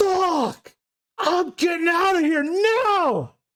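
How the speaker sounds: panicked, terrified, very high, drawn-out shriek. Voicing a character who pulls a gun after seeing a face of terror: screaming in terror. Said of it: "As he's screaming".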